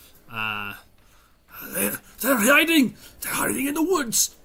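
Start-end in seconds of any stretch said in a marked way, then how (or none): 1.7-4.2 very high, rising monster yell. Voicing the pack lord spotting hidden enemies: gnoll pack lord yelling. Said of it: "he yells out".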